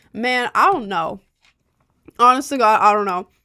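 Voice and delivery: speaking with mouth full. Answering a question about mic settings, mouth full of yogurt.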